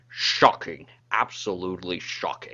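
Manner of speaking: very low, thick Scottish accent, slurred s. Prepping impressions with the others, the speaker demonstrates a Sean Connery impression. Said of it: "prep line that we had for Sean Connery".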